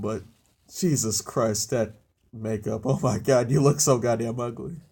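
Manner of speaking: words broken up by laughing throughout. Reacting to a character's makeup, laughing while talking. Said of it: "I'm sorry if I'm laughing".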